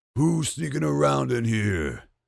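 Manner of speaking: slow, gruff, rough, playfully scary brute voice. Acting out the man who caught a hiding seven-year-old, in his Hulk voice. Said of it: "he came in with his Hulk voice".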